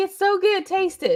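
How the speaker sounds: high, coaxing, friendly urging.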